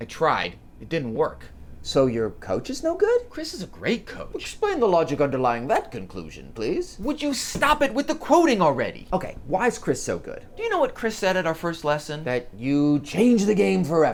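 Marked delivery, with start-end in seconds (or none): 4.4-7.0 fake, overdone English accent with swooping pitch. Arguing with someone about a coach, answering them in a bad English accent. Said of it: "(bad English Accent)".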